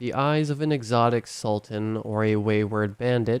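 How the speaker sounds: plain reading voice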